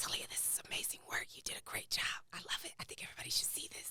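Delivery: soft, hushed whisper.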